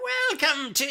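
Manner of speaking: put-on very high elderly woman's voice. Recalling the line he voiced for the group in an early episode, in an old lady voice. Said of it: "I did this old lady's voice".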